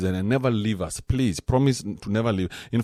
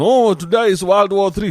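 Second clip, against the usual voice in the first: put-on very loud, fretful, paranoid old woman voice; 9 semitones higher, 9 dB louder than usual. The speaker imitates an old woman full of paranoia: mock-paranoid old woman. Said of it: "this bitch full of paranoia".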